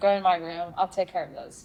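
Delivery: normal talking voice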